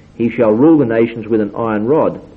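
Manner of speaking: plain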